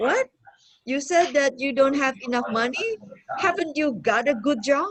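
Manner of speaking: mocking, incredulous, sarcastic tone. Acting out an example of the negative question: sarcastic disbelief. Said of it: "it's saying that".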